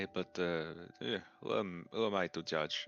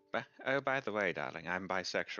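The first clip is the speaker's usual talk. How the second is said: breezy, casual, offhand delivery. Imitating the mother telling the father she is bisexual. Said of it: "just the fucking mother going like".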